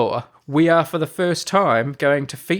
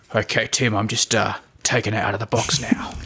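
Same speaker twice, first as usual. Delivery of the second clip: silly mock-grave voice, much lower pitch; 5 semitones lower than usual. Presenting Spoon of the Week to Tim after being asked for gravitas: silly mock-grave voice. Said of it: "now you're just being silly".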